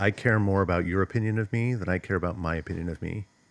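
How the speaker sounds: usual speaking voice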